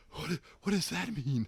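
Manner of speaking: winded, out-of-breath, breathless, airy voice. Retelling how he responded to an explanation: breathless voice. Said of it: "it's like breathlessly like".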